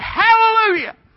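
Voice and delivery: very high, loud, exultant preacher-style cry. Retelling a story of an old preacher praising God at passing trains: imitating excited praise. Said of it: "what you getting so excited about?".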